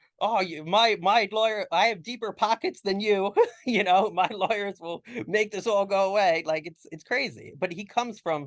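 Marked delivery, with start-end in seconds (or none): 0.2-6.4 play-acted high yelling shout. Recounting what a man yells as the speaker drives off, imitating him yelling. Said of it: "He'll he'll yell something like".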